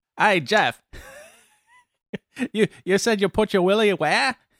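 put-on New Zealand accent. Addressing someone by name with a question: put-on new zealand accent. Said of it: "That's my New Zealand accent".

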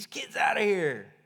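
mild, half-shouted yell. Retelling a scene from a story, acting out one man's yell. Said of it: "Peter up there yelling".

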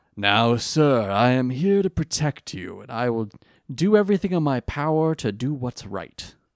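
courteous, respectful voice. Imitating Flame Swordsman speaking to Joey: respectful Flame Swordsman voice. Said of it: "He's very, like, respectful of Joey".

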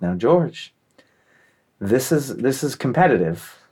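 solemn, earnest, dead-serious delivery. Speaker retells a man's mother explaining the Easter egg hunt, imitating her serious tone. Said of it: "all serious".

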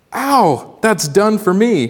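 high, drawn-out gasped cry of pain, reeling. Narrator reading the ghost's line after the reptile is flung, gasping. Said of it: "Gasped the ghost".

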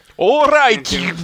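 high, loud bad Scottish accent. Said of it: "can anyone here do a Scottish accent?".

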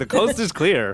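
high-pitched, loud hollered yell. Calling in character to the others that nobody is around: yelling. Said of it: "I'm just yelling".

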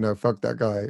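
normal talking voice

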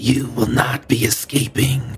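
grotesque, ugly, hideous monster voice. Voicing an enemy that speaks Sylvan to the party: hideous voice. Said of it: "just this hideous voice of".

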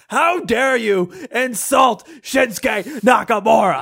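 loud, slow, high, indignant, drawn-out furious yell. Retelling being insulted at a match, imitating an angry shout. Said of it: "during the match I was shouting".

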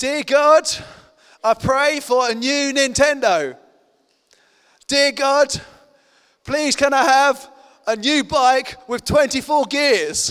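deliberate, carrying, loud and slow delivery. Retelling a joke about a brother praying before bed: imitating loud praying. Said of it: "was praying really loudly".

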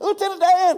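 very high, loud, excited shout. Retelling a movie scene where he jumps off a boat: excited Forrest Gump voice. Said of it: "he's so excited".

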